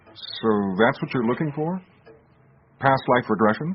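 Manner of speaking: surprised, taken aback. In a drama scene, David asks the other speaker a follow-up question, surprised. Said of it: "You sound surprised".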